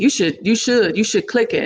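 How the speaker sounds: ordinary delivery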